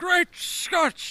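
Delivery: very high, loud outcry. Joking about a drunk cartoon scientist: Christopher Lloyd impression. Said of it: "You sounded like, uh, what's his name from Back to the Future?".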